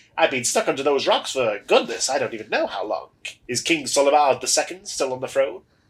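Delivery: loud voice of a talking skeleton. Game narrator voices a freed skeleton speaking to the player, skeleton voice. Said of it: "love the voice you've given the skeleton".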